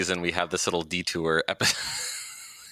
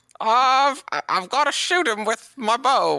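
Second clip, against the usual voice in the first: put-on pleading voice, much higher and louder; 6 dB louder than usual. Asked for his best Gravely impression, speaker attempts a beggar-like Gravely impression. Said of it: "We all just sound like a bunch of like beggars".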